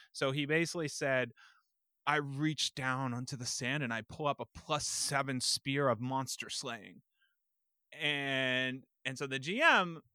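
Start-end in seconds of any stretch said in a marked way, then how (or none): none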